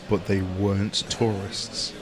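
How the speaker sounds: mock dramatic narration voice. Listener chimes into a friend's travel story about strangers, dramatic narrator voice. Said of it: "Narrator voice".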